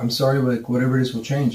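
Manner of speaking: weepy, tearful voice, acted out. Retelling finding a roommate crying and apologizing: imitating George crying. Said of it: "I would find him crying and going".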